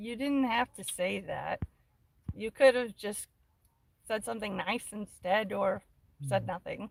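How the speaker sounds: ordinary talk, nothing marked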